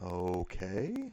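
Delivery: mocking, unimpressed, heavily sarcastic tone. Retelling a phone call after an awkward pause: imitating a sarcastic reply.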